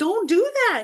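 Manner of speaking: shouting, pitched high. Retelling watching ghost hunters call out spirits: imitating yelling at the tv. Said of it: "I'm literally yelling at the T V".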